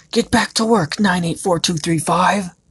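high, loud, shouted voice. Reading a story, a one-eyed monster shouts at a worker: shouting. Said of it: "It shouted again".

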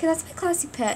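voice cracking. Showing viewers a pet on camera, voice cracking. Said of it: "Oh, that voice crack".

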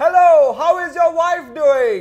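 loud, high fake screaming, slow and drawn out. Showing how screaming ruins a conversation, mock screaming. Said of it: "Why are you yelling?".

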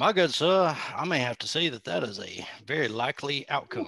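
put-on Southern accent with a handsome sound. Playing a role in a handsome Southern accent. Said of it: "handsome Southern accent".

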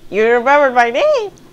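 put-on very high, loud, girly, bright girl voice. Playing a game and meeting the princess, voicing her lines; Zelda girl voice. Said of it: "That's my girl voice".

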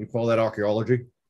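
put-on Scottish movie-star voice. Showing an old impression from the film Indiana Jones: Sean Connery impression. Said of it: "I used to do a good Sean Connery impression".

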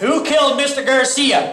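shouting. In a scene where the group argues over who had a motive, shouting. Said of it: "Stop shouting!".

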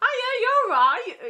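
put-on accent from Gloucester. Retelling what a man said to them, in his Gloucester accent. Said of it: "in his little Gloucester accent".

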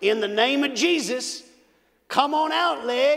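put-on loud, commanding country accent. Retelling how a cowboy prayed over a leg, in a country accent. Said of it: "I'll never forget this country accent".

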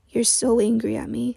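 murmuring. After apologizing, Jude murmurs to a silent Harold. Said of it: "he murmured".

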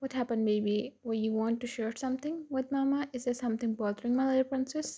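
ordinary delivery, nothing marked

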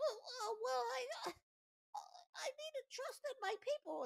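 put-on very high, childlike anime kid voice. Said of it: "your same anime little kid voice".

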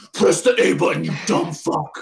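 evil, demonic voice. Mocking a game tutorial, the speaker imitates a character's demonic voice. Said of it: "like a demonic voice in your head".

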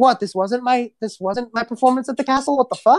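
confused, bewildered, sounding lost and baffled. Voicing Shira waking up confused after the prank: voicing Shira confused. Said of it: "Shira's just like".

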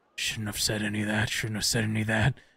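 low, hushed mutter under the breath. A man tries to walk past the players down the stairs: under his breath. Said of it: "is under his breath just saying".

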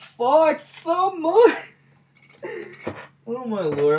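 very high, loud, drawn-out laughing outburst. Speaker after losing their temper twice this week, now cracking up laughing. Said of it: "I'm fucking cracking up".

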